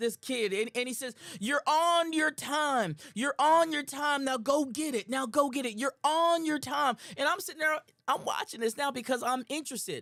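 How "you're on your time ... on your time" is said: mock coach voice, yelling, slow and driving. Retelling how the coach at the track yelled at the runner: imitating a coach yelling. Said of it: "he started yelling at this".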